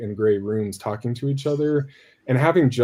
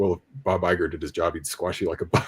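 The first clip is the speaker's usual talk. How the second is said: put-on muttering under the breath, lower and quieter; 6 semitones lower, 4 dB quieter than usual. Retelling a red carpet clip, imitating George Lucas muttering under breath. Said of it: "you hear him under his breath".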